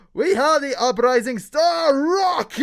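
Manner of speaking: boxing ring announcer voice. Voicing an announcer who opens a fight event for the crowd: fight announcer voice. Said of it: "kind of announcer comes out, is like".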